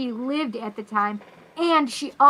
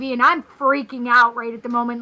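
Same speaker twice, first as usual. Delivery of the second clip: normal talking voice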